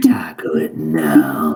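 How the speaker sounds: very low, drawn-out, deepest demonic voice. Voicing a creature's command in the deepest demon voice. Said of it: "in the deepest, just demon voice you can muster".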